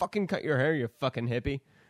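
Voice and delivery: put-on old-school, scolding grandfather voice. Speaker recalls his late grandfather's nagging about long hair: imitating scolding grandpa. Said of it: "but I can hear it every day".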